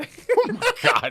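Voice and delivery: very high, slow squealing laugh through the words.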